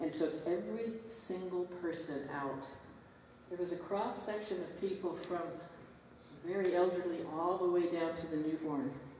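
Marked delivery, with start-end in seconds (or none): none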